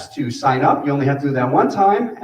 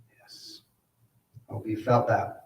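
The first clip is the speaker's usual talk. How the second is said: normal talking voice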